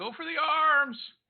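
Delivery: shrill, high-pitched battle-cry style shout. Voicing a character striking a foe, calling to anyone listening: yelling. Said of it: "I yell".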